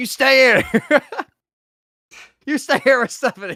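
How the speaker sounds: shrill, very high-pitched, loud barking yell. Telling a wrestling storyline, act out his order to stay with stephanie, retelling a yell. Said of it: "He's like yelling".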